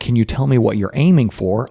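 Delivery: normal talking voice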